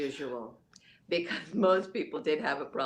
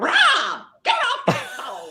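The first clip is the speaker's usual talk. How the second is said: very high, loud, shrill, booming, swooping parrot squawk; 13 semitones higher, 8 dB louder than usual. Retelling how grandfather's parrot interrupted his calls with clients, imitating a parrot. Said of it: "and the parrot would go".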